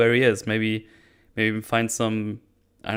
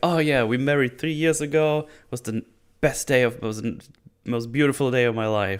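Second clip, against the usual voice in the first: super excited, gushing, bubbling over with excitement; 2 semitones higher than usual. Acting out a wife recalling their wedding: imitating someone super excited. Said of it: "super excited".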